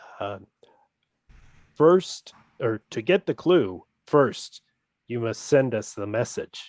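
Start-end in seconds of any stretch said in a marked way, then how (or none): 4.1-6.7 put-on automated recorded phone-message voice. Imitating the recorded phone message after being asked for an impression. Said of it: "Give us an impression, [name], of the voice".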